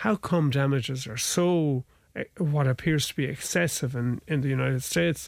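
usual speaking voice

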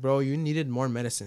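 ordinary delivery

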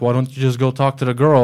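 ordinary delivery

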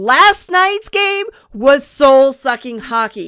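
loud, slow, upset ranting.

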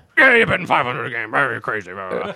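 offhand, plain, dismissive brush-off. Retelling a grandparent's reply to a betting plan: imitating Poppy. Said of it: "I hope that's exactly how he sounded".

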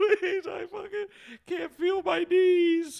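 very high, loud, drawn-out wailing and sobbing. Acting out an imagined girl who is crying: mock crying plea. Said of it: "And she's just crying. She's like".

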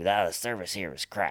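put-on gravelly old man Brooklyn mobster accent.

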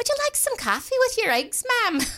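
put-on very high Irish maid accent. Retelling an improv scene where the speaker plays a maid, Irish maid voice. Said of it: "I'm an Irish maid".

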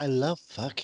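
droll delivery in a star style. Retelling a comedian's one-line impression: Kim Cattrall impression. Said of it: "a great Kim Cattrall impression".

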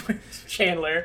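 slow, mock sitcom-style quip delivery.

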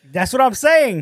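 shouting. Insisting on a point to another speaker: yelling. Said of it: "Why are you yelling at me".

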